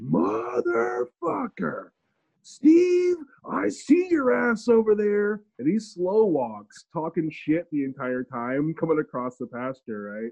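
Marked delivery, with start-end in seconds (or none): 0.0-5.4 acted, shrill, slow, swooping, very high taunting scream. Retelling a bull across the pasture: imitating a screaming bull. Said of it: "He just starts screaming".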